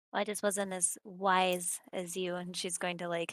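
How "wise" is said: sarcastic, mocking, heavy stress on "wise". Speaking in character to an NPC: sarcastic, stress on WISE. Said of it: "emphasize wise in, like, a sarcastic tone".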